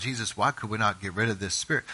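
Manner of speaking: private, hushed, low half-whisper. Retelling the disciples asking Jesus privately: imitating a low half-whisper. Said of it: "I can just hear him kind of a low whisper".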